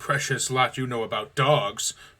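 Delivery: loud sneering, scornful voice. A brother answers his sister's plea about the dogs, sneering. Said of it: "her brother sneered".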